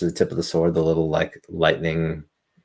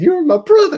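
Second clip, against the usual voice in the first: forced crying, very high and very loud; 10 dB louder than usual. Quoting a Tropic Thunder line: fake crying from Tropic Thunder. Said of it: "when he's trying to cry at the beginning of Tropic Thunder".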